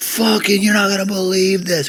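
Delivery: very high, shrill, excited screaming. Retelling how a man came back from visitation, imitating someone screaming. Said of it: "he was screaming".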